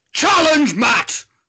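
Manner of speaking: very high-pitched, loud shout. Answering a request to do Brian Blessed: Brian Blessed impression. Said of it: "can you do Brian Blessed?".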